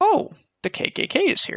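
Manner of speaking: sarcastic, very high, swooping put-on excitement. Reading a fact aloud to the others: fake enthusiasm. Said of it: "Bro sounded enthused when he read that".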